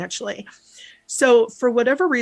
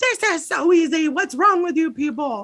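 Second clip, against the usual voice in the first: furious, high-pitched, angry screaming shout; 8 semitones higher than usual. Recounting a night of watching TV, retelling screaming at the TV. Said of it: "I'm screaming at the T V at this point".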